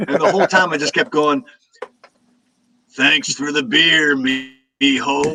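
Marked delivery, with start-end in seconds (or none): 2.9-5.4 very slow, drawn-out delivery, every word stretched. Retelling repeatedly greeting an actor in his own voice: Sam Elliott voice. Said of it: "doing his own voice to him".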